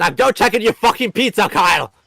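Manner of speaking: loud, high-pitched yell. Telling the other speaker to check on his pizza: yelling. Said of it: "he yelled at me".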